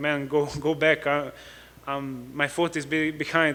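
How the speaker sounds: ordinary talk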